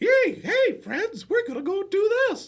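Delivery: rising into a loud, raspy falsetto. Talking about voice imitations, showing how Mickey talks, in a Mickey Mouse impression. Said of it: "Mickey's like".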